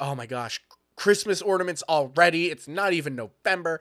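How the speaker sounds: imitated sassy voice. Imitating the co-host's roommate during an argument: put-on sassy voice. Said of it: "this really sassy voice".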